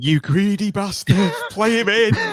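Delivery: very high-pitched shrill screaming. Speaker recounts screaming at a player who didn't pass, retelling own scream. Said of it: "I was screaming".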